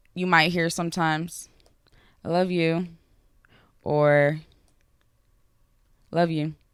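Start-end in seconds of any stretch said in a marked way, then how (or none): 2.3-6.6 flat, unexpressive, unenthusiastic, no-feeling delivery. Comparing ways of saying I love you, a flat unenthusiastic version. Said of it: "All three of those things sound very unexpressive".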